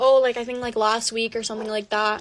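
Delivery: ordinary delivery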